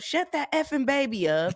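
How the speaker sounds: high-pitched yell. Retelling a passenger on a plane: imitating someone yelling. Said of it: "backside yell".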